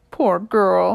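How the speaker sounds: comforting tone. [name] speaks to Soda, cradled in his arms; soothing voice. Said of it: "he says to her in a soothing voice".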